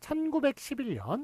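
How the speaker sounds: stress on 천구백십일.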